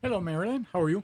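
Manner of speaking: very prim and proper. The producer greets the host at the start of the show, prim and proper. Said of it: "that was very prim and proper".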